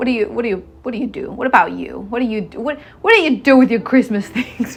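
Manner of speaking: threatening, sinister, menacing voice. Speaker asks listeners what they do with their christmas things, sounding menacing. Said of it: "Why do I sound so menacing?".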